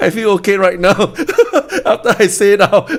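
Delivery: speaking while laughing throughout.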